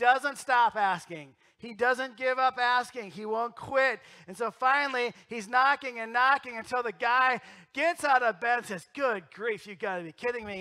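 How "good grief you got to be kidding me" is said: angry, upset, fed-up voice. Acting out the woken neighbor in a parable: imitating an angry, upset neighbor. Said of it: "he's all angry and he's upset".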